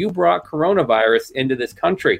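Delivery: ordinary delivery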